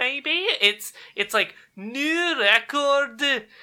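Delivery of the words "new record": put-on overdone Scottish accent in an announcer style. Showing how a game announcer voice sounds in his head: Mario Party announcer voice. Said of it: "that voice sounds overly exaggeratedly, like, Scottish".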